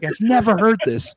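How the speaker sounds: weepy, tearful voice. Retelling what the anesthetist said: imitating someone crying. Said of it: "he was crying, going like".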